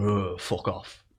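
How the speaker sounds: mumbled under breath. Retelling what a man said after being refused a cigarette, retelling a mumbled insult. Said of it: "mumbled under his breath".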